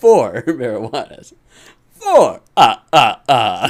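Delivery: loud, slow vampire voice, savouring each word. In a sketch about buying marijuanas, counting them in a Sesame Street Count voice. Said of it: "Did they even still have count on".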